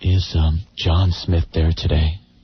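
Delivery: sober, solemn, grave, somber delivery. Describing calling a funeral parlor to ask for the deceased: somber voice. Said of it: "you say in a somber voice".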